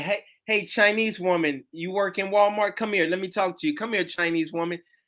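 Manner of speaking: ordinary talk, nothing marked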